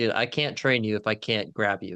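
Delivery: ordinary talk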